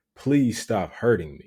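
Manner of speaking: ordinary delivery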